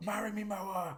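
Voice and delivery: high, mock lone yell like a crowd member. Describing a manchester concert recording, the speaker reenacts a crowd shout, retelling a shout from the crowd. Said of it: "some random idiot just shouts out".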